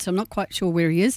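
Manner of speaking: plain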